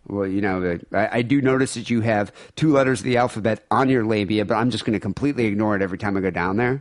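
ordinary talk

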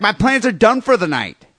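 put-on Brooklyn accent with a nagging tone. Asked whether a woman had a Brooklyn accent, the speaker quotes her: imitating a Brooklyn accent. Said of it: "Did she have like a Brooklyn accent".

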